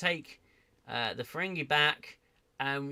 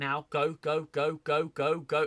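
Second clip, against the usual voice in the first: acted screaming; 2 semitones higher, 5 dB louder than usual. Recalling urging a crew through the wormhole, retelling screaming at the tv. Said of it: "I was screaming at the TV".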